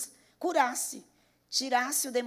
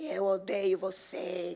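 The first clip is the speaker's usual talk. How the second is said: hideous, low, horrible possessed demon voice; 5 semitones lower than usual. Retelling what a possessed family member said: imitating a horrible possessed voice. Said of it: "com aquela voz horrorosa".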